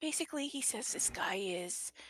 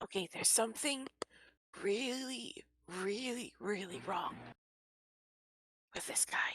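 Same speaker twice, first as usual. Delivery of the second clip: hushed, half-whispered stage whisper; 3 dB quieter than usual. Speaking in character, warning the party about a stranger: half-whispering to the party. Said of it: "whispers to the party".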